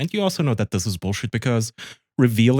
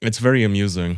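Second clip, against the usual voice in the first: usual speaking voice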